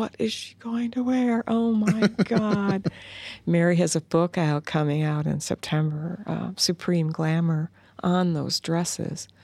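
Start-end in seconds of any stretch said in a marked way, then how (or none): 0.0-2.9 put-on childlike, high voice. Retelling watching Ed Sullivan every week as a kid: imitating own childhood self. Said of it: "I was one of those kids who were".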